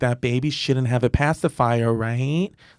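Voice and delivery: mocking passive-aggressive tone. Retelling what a woman in an elevator said to her child: imitating a passive-aggressive remark. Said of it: "passive aggressively".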